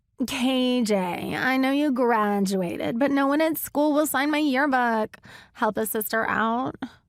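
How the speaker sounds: high, whiny put-on pleading voice. Frankie puts on a voice while talking to K J, whiny voice. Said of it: "Frankie put on a whiny voice".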